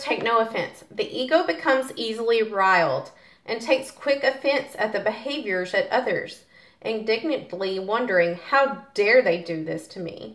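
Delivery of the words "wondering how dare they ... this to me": ordinary talk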